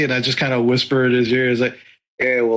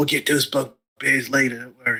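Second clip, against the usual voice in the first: hushed, half-whispered aside; 4 dB quieter than usual. Speaking in character to passing folks in the market: half-whispering. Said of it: "I will whisper to them".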